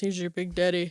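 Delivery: voice dropped low and deep, big-guy voice. Retelling how a waiter brought the cake: imitating the waiter's voice. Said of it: "he's got this voice".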